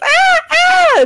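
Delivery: put-on terrible, very high, shrill, girly screams of ah. Voicing a character with something in his nose: terrible girly screams. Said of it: "terrible girly screams".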